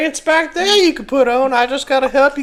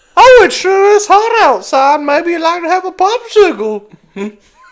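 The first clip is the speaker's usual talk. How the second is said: put-on loud twelve-year-old kid voice; 4 semitones higher, 7 dB louder than usual. Acting out what the twelve-year-old says about popsicles, imitating the twelve-year-old. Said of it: "The twelve year old does the whole popsicle".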